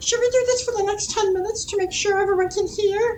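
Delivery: very high, put-on pixie voice. Checking whether everyone can hear them: pixie voice. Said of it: "pixie voices".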